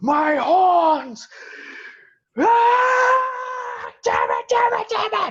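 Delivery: shrill, very loud, very high, drawn-out howl of fury. Narrating a figure whose horn a thrown bust just broke off, screaming in rage. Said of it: "As he's just screaming in rage".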